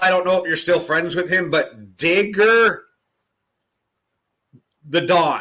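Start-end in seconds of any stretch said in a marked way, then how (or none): 2.0-5.4 slow, deliberate, emphatic stress on Digger. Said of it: "emphasized how I said that".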